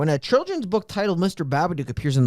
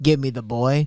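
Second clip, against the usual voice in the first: put-on monster voice; 3 semitones lower than usual. Describing the film's monster, imitating it: Babadook voice. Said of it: "the Babadook just being like".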